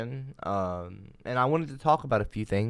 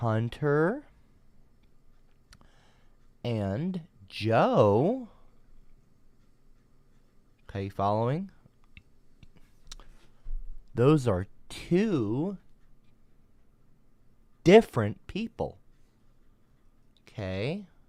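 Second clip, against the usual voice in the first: very slow, condescending, one word drawn out; 2 semitones higher than usual. Explaining to a listener that two names are different people, very slowly. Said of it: "I'm going to say it real slowly for you".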